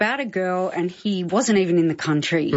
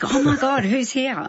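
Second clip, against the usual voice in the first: mock thrilled, eager, high, excited voice; 6 semitones higher than usual. Retell his reaction to paparazzi outside the restaurant, imitating someone really excited. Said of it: "he got really excited".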